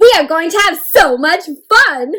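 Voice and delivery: loud, bursting, eager reading-aloud delivery. Reading a story line aloud to show an exclamation point: loud and excited reading. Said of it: "I read them really loud and excitedly".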